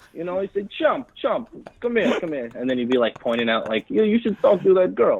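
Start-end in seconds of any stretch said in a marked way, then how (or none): 0.7-2.4 put-on Croatian accent, much higher, slower. Retelling how a Croatian immigrant he knew talked, in a strong Croatian accent. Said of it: "Is that offensive to do a Croatian accent?".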